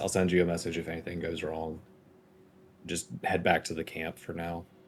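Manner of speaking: whispering under breath.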